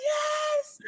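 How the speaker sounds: very high, tearful crying scream. Retelling a painful medical procedure, imitating own tearful scream. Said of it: "I was screaming with tears in my eyes".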